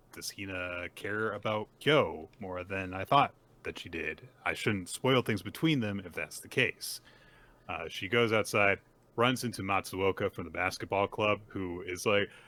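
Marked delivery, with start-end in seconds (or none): none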